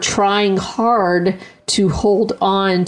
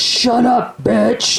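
growling, rough-edged voice; 4 semitones higher than usual. Retelling what a young boy would say to his mom, in a growling voice. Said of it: "in this growling kind of voice".

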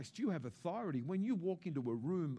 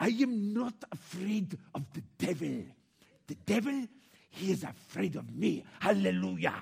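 loud, slow, booming preacher voice; 3 semitones higher, 7 dB louder than usual. Preaching to a church audience, a Reinhard Bonnke impression. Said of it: "This is the only impression of Reinhard Bonnke that I can do".

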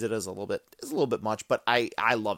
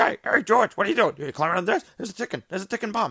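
very high-pitched voice; 11 semitones higher, 6 dB louder than usual. Recalling a Seinfeld scene with the boss shown from behind: Larry David voice. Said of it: "Larry David's voice".

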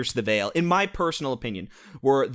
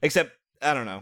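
ordinary talk, nothing marked

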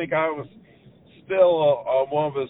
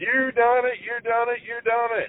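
play-acted high screaming, words repeated over and over; 10 semitones higher than usual. Retelling a father's reaction to a first deer: imitating someone screaming. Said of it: "and he screamed".

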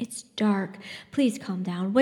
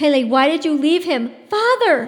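loud calling out, pitched up; 7 semitones higher, 9 dB louder than usual. Yeva tears free of Lena's grip and calls into the night, calling out. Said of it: "she called into the night".

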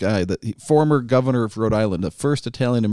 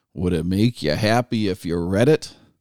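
snide, cutting, really snarky tone; 2 semitones lower than usual. Quoting a senator's remark to a witness at a hearing, mimicking a snarky tone. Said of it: "in this really snarky tone".

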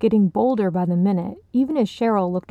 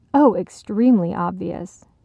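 ordinary delivery

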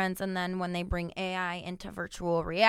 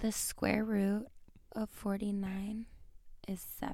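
seductive, sexy delivery, much quieter; 2 semitones higher, 8 dB quieter than usual. Told by another player to make a math fact sound hot, try to sound hot. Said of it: "Try to make that sound hot".

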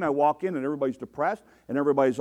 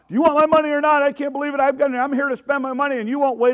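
mock shrill, very high, out-of-control screaming; 11 semitones higher, 5 dB louder than usual. Retelling a maskless customer at the order desk, imitating him screaming. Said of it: "Screaming his head off about".

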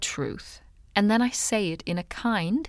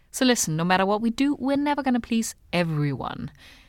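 usual speaking voice

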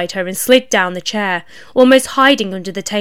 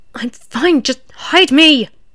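desperate, pleading, pitched-up voice; 5 semitones higher than usual. Asked by a man if she's good, she answers: desperate. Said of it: "said X desperately".

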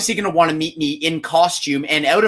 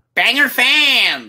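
high-pitched, with the word fans drawn out; 7 semitones higher than usual. Doing a requested impression of Blaine for the other speaker: Blaine impression. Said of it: "you wanna hear my Blaine impression?".

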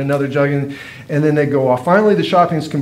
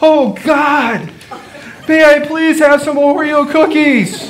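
mock shrill small boy's shout, very high; 11 semitones higher, 4 dB louder than usual. Retelling a pastor's kid standing up in a store checkout line: retelling a little kid's shout. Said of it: "shouting to the top of his little pastor kid voice".

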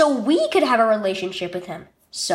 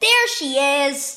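sudden exclamation; 2 semitones higher than usual. A girl playing a hiding game with her baby sister; exclaimed. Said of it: "exclaimed Claire".

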